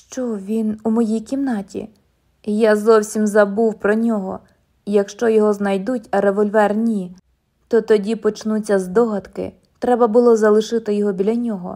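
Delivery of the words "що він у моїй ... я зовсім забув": usual speaking voice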